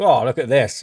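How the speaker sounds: ordinary talk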